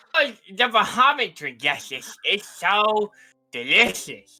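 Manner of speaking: put-on high character voice. Playing Arco while talking to the group about a drink, high-pitched Arco voice. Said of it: "when I'm doing my high pitched Arco voice".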